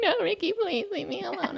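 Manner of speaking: weepy, whimpering, crying, very high. Retelling own past plea to stop being grilled: imitating own past crying. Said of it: "I was crying".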